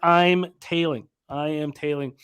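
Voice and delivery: ordinary talk, nothing marked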